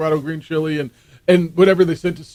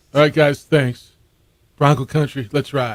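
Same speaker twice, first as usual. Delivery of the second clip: mock sober, downbeat, somber press-conference tone; 3 semitones lower than usual. Mocking a press conference after a loss, imitating a somber tone. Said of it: "they do some really somber press conference".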